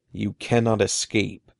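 low growling voice. A narrator reads the caped man's line to the storyteller and Eddie, growled. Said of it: "the man growled once again".

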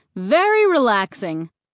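ordinary delivery

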